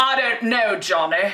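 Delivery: put-on Transatlantic accent. Picturing a film noir femme fatale with a long cigarette: imitating old film noir transatlantic accent. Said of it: "you know how they talked in those movies?".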